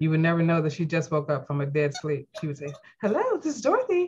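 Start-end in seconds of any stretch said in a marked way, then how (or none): 3.0-4.1 polished, bright professional office voice, very high. Imitating their mother answering a 3 a.m. call, Dorothy's perfect office voice. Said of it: "she would have her perfect office voice".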